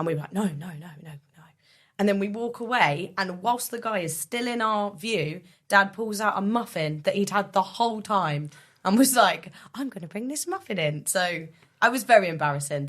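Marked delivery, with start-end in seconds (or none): 9.7-11.1 squeaky, high cartoonish voice. Retelling how Dad embarrassed you by pulling out a muffin, do a Mickey Mouse impression. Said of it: "wonderful Mickey Mouse impression that your dad did".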